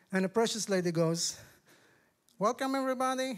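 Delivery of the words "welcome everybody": put-on heavy, high-pitched Southern accent from Florida. Retelling a lady's welcome at Bible study: strong Southern accent from Florida. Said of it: "she has a strong Southern accent from Florida".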